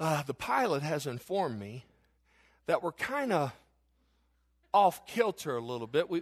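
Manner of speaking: very low, hushed, confidential-sounding half-whisper. Speaker acts out what a woman told her in the moment; retelling a half-whisper. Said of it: "she whispers".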